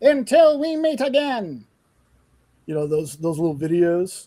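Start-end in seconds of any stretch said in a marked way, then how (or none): 0.0-1.7 very high, slow, silly, goofy cartoon voice. Describing a voice he has always loved, the speaker tries it: silly cartoon voice. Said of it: "I want that kind of silly voice, but that's a cartoon voice".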